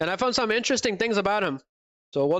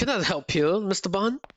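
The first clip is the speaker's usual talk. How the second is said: bad, unconvincing put-on British accent. Playing a video game, imitating the evil partner's line in a bad British accent. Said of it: "That is one thing Riser should never do, a British accent".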